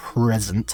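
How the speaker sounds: ironic air-quote stress on the word "present". Describing events over a fifteen-year period, saying "present" as if in air quotes. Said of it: "I'm saying present with uh, air quotes around it, you can probably hear me saying it like that".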